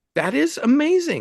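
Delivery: high, slow amazed exclamation.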